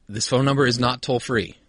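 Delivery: ordinary talk, nothing marked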